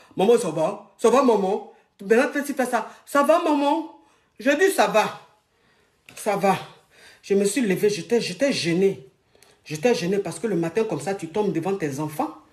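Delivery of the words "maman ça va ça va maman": big, deep voice, slow. Mother retelling her fall, quoting her child asking if she's okay: Marvin's big deep voice. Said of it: "Marvin a sa grosse voix là".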